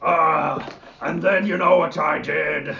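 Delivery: very loud, high, rowdy orc voice. Voicing an orc telling a story at a table: orc storyteller voice. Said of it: "the orc telling the story slaps the other one on the side and goes".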